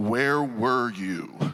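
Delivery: deep, very low, commanding voice. Retelling a father's question at the door: imitating father's deep commanding voice. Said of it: "my father's deep, commanding voice".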